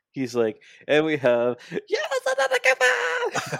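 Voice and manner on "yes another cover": very high shriek, rising in pitch all the way. Retelling an announcement of a new arrival: imitating Tony Khan's high shriek. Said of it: "He was shrieking like a little kid".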